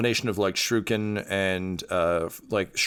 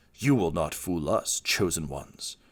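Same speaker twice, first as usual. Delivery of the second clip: voice pitched lower; 3 semitones lower, 3 dB quieter than usual. Voicing a hidden figure threatening the chosen ones: voice from the shadows. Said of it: "a voice from the shadows say".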